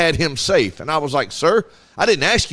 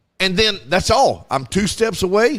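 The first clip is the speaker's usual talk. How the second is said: ordinary delivery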